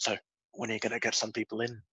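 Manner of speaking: put-on whisper. Retelling a little nudge on the side: imitating someone whispering. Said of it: "always just whispering".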